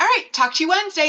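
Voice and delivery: fast, high-pitched, breezy delivery.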